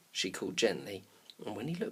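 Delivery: ordinary delivery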